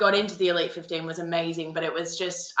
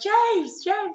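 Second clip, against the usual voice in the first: very high put-on yell. Retelling pushing through a finish-line crowd to reach him, yelling his name. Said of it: "And I'm like yelling".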